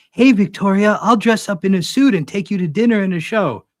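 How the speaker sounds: high-pitched, sneering, sarcastic mocking voice. Paraphrasing a reference someone made, speaker mocks it; mocking paraphrase of someone. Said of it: "Paraphrase in a mocking voice".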